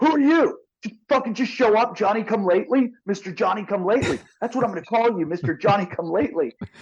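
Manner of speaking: play-acted, high, angry, heated shouting tirade. Retelling an argument over a wave, imitating the man yelling at the speaker. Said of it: "He starts yelling at me".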